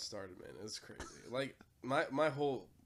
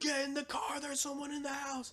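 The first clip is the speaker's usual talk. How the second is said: scream, pitched higher; 4 dB louder than usual. Retelling running out of the house: imitating someone screaming. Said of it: "I'm screaming".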